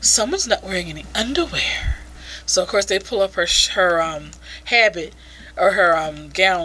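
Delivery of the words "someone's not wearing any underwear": put-on swooping, sing-song porn voice. Reading a line of dialogue aloud from the story: porn voice. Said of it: "again, more porn voice".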